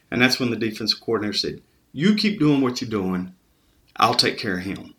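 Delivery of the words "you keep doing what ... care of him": usual speaking voice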